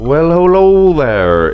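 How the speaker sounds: affected silly voice. Host opening an episode of Shooting the Shit, in a put-on voice. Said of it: "I don't know why the fuck I did that voice".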